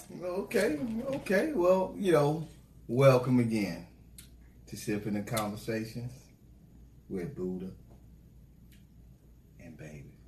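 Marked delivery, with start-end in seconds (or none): 2.9-10.1 sultry, breathy, seductive whisper. Welcoming listeners back to the podcast, in a seductive tone. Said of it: "I tried to sound seductive when I said that right there".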